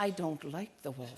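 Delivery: not-so-subtle, soft stage half-whisper. Retelling how someone leaned over and half-whispered, imitating a half-whisper. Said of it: "leaned over to me and whispered".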